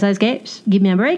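ordinary talk, nothing marked

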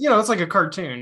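plain

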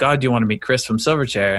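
ordinary delivery

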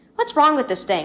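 plain reading voice

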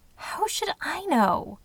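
high, drawn-out hiss. Narrator reads a woman answering a man's question, hissed. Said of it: "Cheryl hissed".

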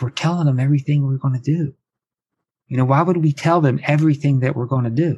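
imitated whispering. Retelling how an assistant coach spoke to the head coach: retelling a coach's whisper. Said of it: "And he's whispering".

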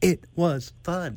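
put-on staccato, stop-start voice. Showing how a Trump impression turns into William Shatner impression. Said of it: "I turn into William Shatner".

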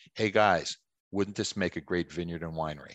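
ordinary talk, nothing marked

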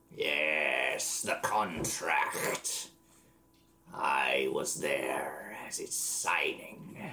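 menacing undead voice. A game master voices a lich answering the players: scary lich voice. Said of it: "it's a lich. ... But he's still scary as hell".

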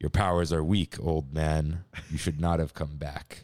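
very low, deepened, dropped voice. Speaker opens a headline with a quoted film line; deeper voice. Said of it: "It was just a deeper voice".

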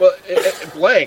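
high-pitched, laughing through words in disbelief. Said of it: "I'm laughing so hard".

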